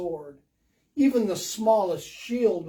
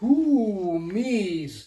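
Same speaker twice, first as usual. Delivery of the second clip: storybook dragon voice, drawn-out "me"; 3 dB louder than usual. Reading a story aloud, the dragon answering Owl in a deep voice. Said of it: "Said a deep voice".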